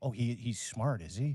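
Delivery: slow, unhurried, each word dragged out. Retelling a podcaster's words: imitating Joe Rogan. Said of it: "He's like".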